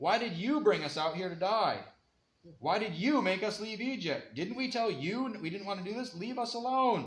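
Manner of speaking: mock aggrieved, angry, accusing complaining tone. Retelling how the people yelled at Moses: imitating people yelling at Moses. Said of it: "They're yelling at Moses".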